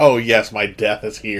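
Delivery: ordinary delivery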